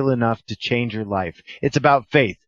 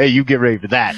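put-on menacing, mock-threatening voice; 4 dB louder than usual. Podcast host repeating the show's plug, in Louis' mock-threatening voice. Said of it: "Louis' mock threatening voice right there".

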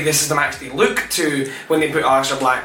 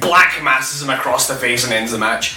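ordinary delivery

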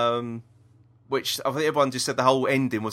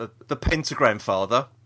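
ordinary talk

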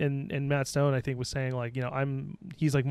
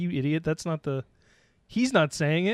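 ordinary talk

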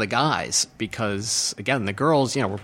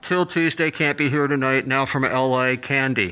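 acted deadpan, flat, level announcer-style delivery. Retelling what the announcer said when the band showed up, imitating a deadpan announcer. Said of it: "Totally deadpan".

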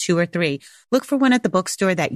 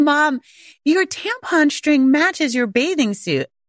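play-acted high shouting, calling out from a distance; 7 semitones higher than usual. Mother retells her child calling out across the pool; imitating Pascal screaming out. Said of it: "Pascal like screams out from across the pool".

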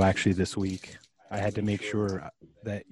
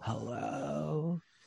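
creaky vocal fry with rising upspeak on hello; 7 semitones higher, 10 dB quieter than usual. Demonstrating upspeak and vocal fry together: vocal fry with upspeak on hello. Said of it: "upspeak and vocal fry is like".

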